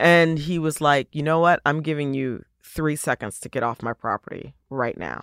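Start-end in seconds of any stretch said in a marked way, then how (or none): 1.1-5.2 put-on deathly serious tone, lower pitch. Retelling a man ordering them off his property: imitating a deathly serious threat. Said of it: "deathly serious".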